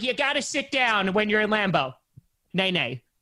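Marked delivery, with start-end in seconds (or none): 0.0-1.9 mocking, put-on dusty old-fan voice. Complaining about fans who sit down at Lambeau, mocking old, dusty fans. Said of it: "one of those old, dusty people who are just like".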